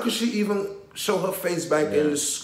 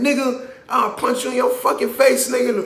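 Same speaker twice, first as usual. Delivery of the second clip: put-on high, agitated, worked-up kid outburst; 7 semitones higher, 4 dB louder than usual. Retelling a video where a kid curses his dad out: imitating an agitated kid.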